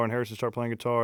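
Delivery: ordinary delivery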